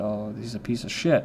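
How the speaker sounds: ordinary talk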